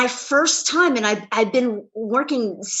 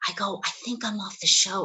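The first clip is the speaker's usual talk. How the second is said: soft, hushed half-whisper; 3 semitones lower, 8 dB quieter than usual. Retelling what was said to a coworker after reading the script: retelling a half-whisper. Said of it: "And I just whispered to her".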